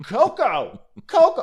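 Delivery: put-on shrill, very high yell. Retelling how a woman called for her dog coco, retelling a yelled dog's name. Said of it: "I don't even know why I'm yelling".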